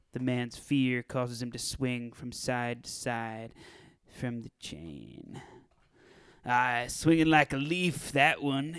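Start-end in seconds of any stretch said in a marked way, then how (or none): 6.4-8.8 put-on Scottish accent, gangster voice. One of two gangsters watching a chained man swing, in a Scottish accent. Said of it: "I'm going to have a Scottish accent now. / I will be playing the character of [name]. / I'm going to have a Scottish accent now. / [name] and [name] decide to go through with a job in order to keep go".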